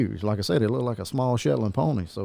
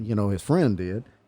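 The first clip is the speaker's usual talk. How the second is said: normal talking voice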